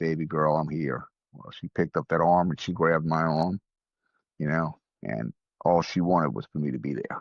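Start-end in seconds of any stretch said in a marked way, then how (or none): none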